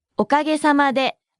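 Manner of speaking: ordinary talk, nothing marked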